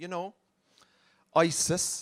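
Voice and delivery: expressionless, dead-straight, level deadpan delivery. Retelling what a friend said about the big issue: imitating deadpan delivery. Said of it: "completely deadpan".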